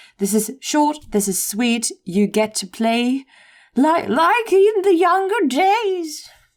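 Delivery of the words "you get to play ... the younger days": put-on old woman's voice, very high-pitched. Describing getting to play like in the younger days: old lady voice. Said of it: "That was my old lady voice".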